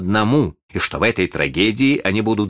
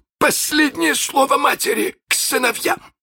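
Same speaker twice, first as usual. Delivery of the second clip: triumphant, exultant, very high-pitched. After silencing everyone, a man makes an announcement, triumphant. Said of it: "с торжеством в голосе объявил".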